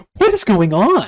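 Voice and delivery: bewildered, baffled, very loud high cry. Retelling a film scene: imitating Adam Kesher sounding baffled. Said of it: "he's just baffled".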